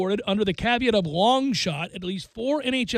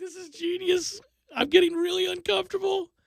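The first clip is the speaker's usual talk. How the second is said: high-pitched, giddy, squirming voice. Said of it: "You're like, like".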